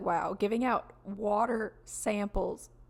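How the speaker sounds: plain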